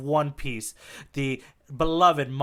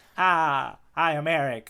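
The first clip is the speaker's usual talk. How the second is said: put-on very slow, old-timey 1930s tour guide voice. In a comedy bit, the tour guide tells a tourist the guide's name, old-timey 1930s tour guide voice. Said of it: "I'll keep this voice for the length of this bit".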